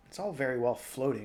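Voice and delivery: ordinary talk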